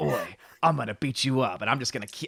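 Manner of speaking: threatening, hard-man, tough-guy character voice. Describing what a show character is like: Butcher voice. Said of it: "Butcher reminds me of".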